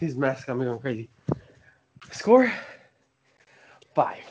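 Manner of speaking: breathless, winded, still catching breath. Asked for a score on the show, speaker answers out of breath. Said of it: "out of breath".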